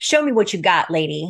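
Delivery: imitated angry tone. Retelling how she challenged the speaker: imitating someone angry. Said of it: "she was very angry".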